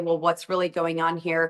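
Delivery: ordinary talk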